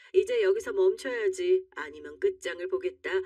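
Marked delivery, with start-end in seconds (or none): none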